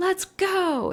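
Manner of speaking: put-on thickest possible Boston accent, pitched very high. Act out Matt Damon leading his army in a trailer, in the most Boston accent. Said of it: "in like the most Boston accent".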